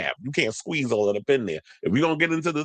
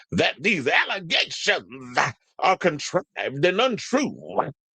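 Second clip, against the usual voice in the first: slow preaching-style sermon delivery; 4 semitones higher than usual. Reading out someone's statement denying allegations, saying it like a pastor. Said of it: "maybe I should say it like a pastor".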